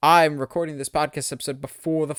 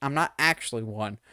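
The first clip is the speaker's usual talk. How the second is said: normal talking voice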